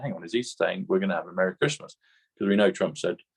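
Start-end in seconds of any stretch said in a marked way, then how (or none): none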